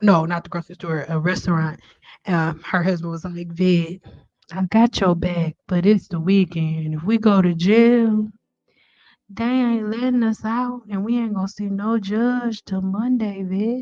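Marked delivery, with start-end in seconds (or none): 3.6-13.8 laid-back, smooth, calm talk. Imitating an aunt's husband who always talks calmly: imitating uncle's smooth talk. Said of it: "That's how he talk".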